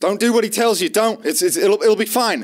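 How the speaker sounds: very high-pitched shouted cry from off. The narrator voices someone the players hear, shouting out. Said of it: "You hear shout out".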